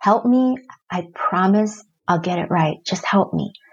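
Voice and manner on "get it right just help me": ordinary talk, nothing marked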